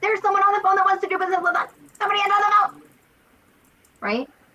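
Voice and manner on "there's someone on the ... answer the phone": high, fast, frantic, urging tone. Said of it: "I'm like".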